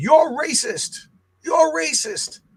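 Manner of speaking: very high, stretched-out, drawn-out scream. Retelling a father showing up on the last school day, imitating him screaming. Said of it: "and he's screaming".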